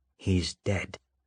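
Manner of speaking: unhurried, steady, slow, quiet repetition. Victor guides the gun from Sydney's grip and tells her, slow, steady voice. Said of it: "repeating himself in a slow, steady voice".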